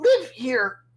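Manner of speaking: trembling startled goblin voice. A game narrator voices a goblin looking up at the players, shaky, startled goblin voice. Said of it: "in a uh, shaky, startled voice and goes".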